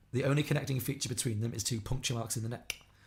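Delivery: ordinary delivery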